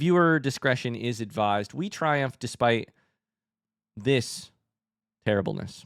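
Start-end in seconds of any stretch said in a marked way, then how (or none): none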